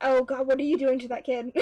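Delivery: ordinary delivery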